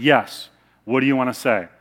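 mock-stern, acted stern voice. Telling the anecdote, the speaker voices the father answering his older son, retelling a stern reply. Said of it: "the father said sternly".

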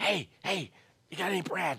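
very quiet, high, hushed stage whisper. Acting out a friend at the window at night: acted stage whisper. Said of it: "he's probably whispering with a stage whisper through the window".

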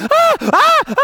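put-on shrill, very loud, very high child's shrieking. Retelling a locked-in child's shrieking behind a bathroom door: imitating a child shrieking. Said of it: "he is just shrieking".

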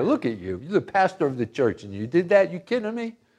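hushed, accusing half-whisper, swooping pitch. Acting out the devil half-whispering accusations in a listener's ear: imitating the devil half-whispering. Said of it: "He's whispering in your ear".

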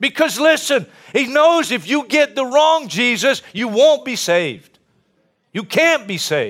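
impassioned, emotional, fired-up, worked-up preaching. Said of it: "I'm so emotional about this".

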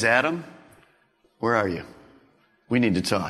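gentle, very deep, soft calling voice. Speaker voicing God calling out to Adam, gentle God voice. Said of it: "God's voice was a gentle voice".

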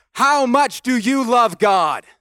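booming preacher voice. Retelling a preacher proclaiming from the pulpit in church: imitating a preacher's booming voice. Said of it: "with a big, booming voice".

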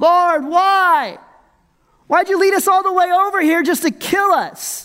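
put-on whiny voice. Acting out people complaining to the lord, mock whining. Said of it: "We have this whining".

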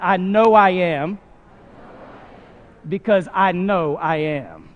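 very slow, heartfelt, sure and confident. Leading the audience in repeating a statement: said with feeling and confidence. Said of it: "with a little confidence".

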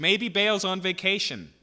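shrill, very loud, high, jeering, mocking shout. Retelling Elijah shouting at people crying out to their god, retelling a mocking shout. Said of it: "he's mocking".

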